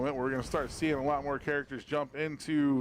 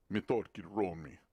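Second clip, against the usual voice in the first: put-on Russian accent, lower and quieter; 7 semitones lower, 5 dB quieter than usual. Reading out a player name from the list: russian accent. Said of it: "a Russian accent".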